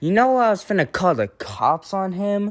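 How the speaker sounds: high, play-acted, rude, furious tone. Retelling the bus driver's words on the phone, mimicking a rude, mad voice. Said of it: "Like in a very rude voice".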